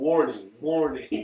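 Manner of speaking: loud, high, alarmed yell. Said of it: "somebody just yelling".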